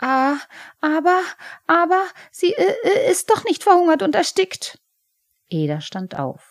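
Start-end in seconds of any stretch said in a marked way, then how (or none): 0.0-4.8 very high-pitched, stuttering, stammering voice. Scolded with contempt, he answers back, stammering. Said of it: "Er stotterte".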